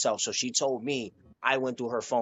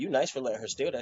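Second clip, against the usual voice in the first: smooth, sly, slick, sneaky tone. Retelling a remark to a partner's sister: imitating a slick remark. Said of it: "you said it in a slick way".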